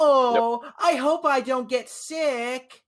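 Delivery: put-on high, manipulative little-girl voice, sickly drawn out. Mimicking the voice people use when arguing: manipulative baby-girl voice. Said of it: "Like that voice".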